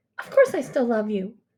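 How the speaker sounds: curt, sharp, irritated snap. Reading aloud, a mother answers her daughter's question: snapping. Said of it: "she snaps".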